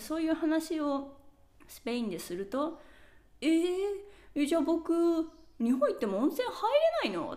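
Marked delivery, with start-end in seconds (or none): 3.4-7.3 acted, half-joking laughing disbelief, high and fast. Quoting how people in Spain react when told about it, retelling a laughing reaction. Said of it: "笑いながら情報談も言われる".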